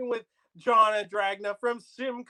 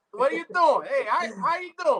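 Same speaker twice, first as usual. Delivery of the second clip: mock Italian accent, pitched higher; 4 semitones higher than usual. Replaying the Italian-style banter from a past show: put-on Italian accent. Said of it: "that whole banter back and forth".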